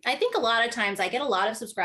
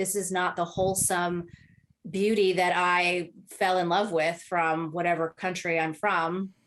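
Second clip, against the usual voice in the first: ordinary talk, nothing marked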